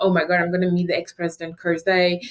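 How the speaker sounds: normal talking voice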